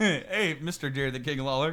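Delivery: sarcastic, high, loud teasing parody voice. Retelling how the other speaker greeted someone: mocking imitation of a friend. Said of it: "You didn't say it like that".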